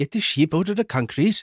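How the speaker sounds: rough attempted Welsh accent. Joking about a way of giving bad news softly: imitated Welsh accent. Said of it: "I can't do a Welsh accent, but it's something like".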